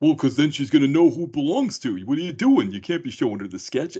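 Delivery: put-on New York accent throughout. Retelling Davi telling someone not to show her the sketch; Davi's New York accent. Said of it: "that New York accent thing".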